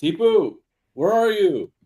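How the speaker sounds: very high, stretched-out, drawn-out calling yell. Stumbling into a dark room calling for Tipu: yelling in character. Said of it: "I start yelling out".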